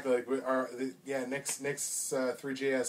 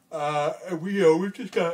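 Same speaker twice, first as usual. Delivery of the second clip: yawning while talking, higher pitch; 4 semitones higher, 8 dB louder than usual. Promoting an upcoming show with a co-host, the speaker is yawning while talking. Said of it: "Pardon me for my yawning again".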